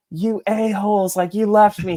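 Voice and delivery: mock angry accusing outburst. Retelling the brother-in-law's reaction to being left behind: imitating an angry brother-in-law.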